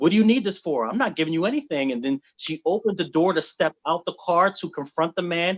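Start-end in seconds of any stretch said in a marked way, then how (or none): 0.0-1.9 put-on haughty, entitled, privileged tone. Retelling a friend's reply to police: imitating a privileged retort. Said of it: "she responded in a privileged way".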